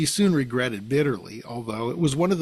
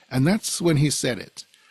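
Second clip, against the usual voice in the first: ordinary delivery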